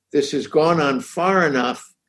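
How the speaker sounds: ordinary delivery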